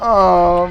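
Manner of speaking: indignant outcry.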